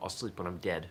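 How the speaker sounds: ordinary delivery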